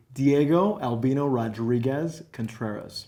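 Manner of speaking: very slow, drawn-out American accent. Speaker shows his full name as it would sound: American accent. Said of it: "if I was going to say it with the American accent here".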